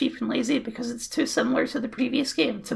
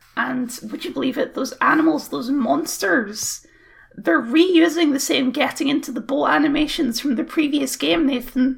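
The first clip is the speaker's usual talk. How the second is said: ordinary delivery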